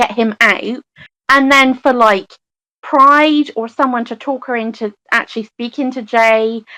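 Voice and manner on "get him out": ordinary delivery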